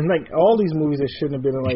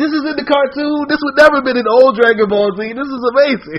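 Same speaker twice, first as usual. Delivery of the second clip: high, loud, amazed excited exclamation. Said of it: "I'm like".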